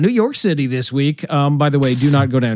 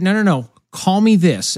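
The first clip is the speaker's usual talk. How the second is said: usual speaking voice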